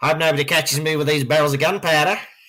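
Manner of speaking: put-on high Aussie accent. Joking about an actor playing a plotter: Australian accent as Guy Fawkes. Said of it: "Guy Fawkes wasn't Australian".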